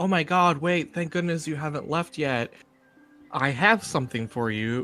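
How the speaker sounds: play-acted, panicked, frantic, urgent pleading man's voice. Retelling how a man ran up as they were leaving: imitating a panicking man. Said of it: "panicking, running at us".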